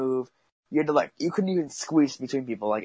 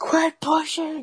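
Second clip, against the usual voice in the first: very high-pitched shriek. Retelling what the dude next to him was screaming: retelling a scream.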